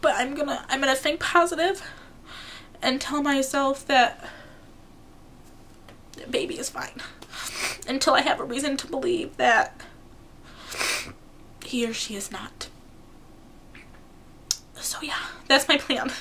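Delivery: tearful voice, speaking while crying. Talking to viewers in a video, crying, tearful voice. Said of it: "Sorry for crying on this video".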